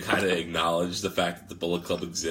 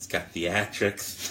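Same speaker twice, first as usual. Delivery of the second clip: put-on, fake lisping voice. Acting out a fan defending pro wrestling: put-on lisp. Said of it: "the lisp only starts coming out with theatrics".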